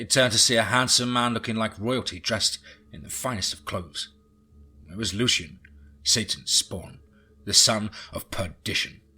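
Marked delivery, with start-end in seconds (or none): none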